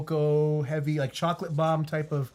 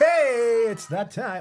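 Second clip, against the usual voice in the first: sudden loud, high yelled shout; 7 semitones higher, 5 dB louder than usual. Interrupting the chat before giving out a discount code, shouting. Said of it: "I didn't mean to shout like that".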